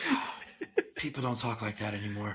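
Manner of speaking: proud, admiring tone. Retelling a movie scene, imitating Nick Cage sounding proud. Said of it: "he's so proud".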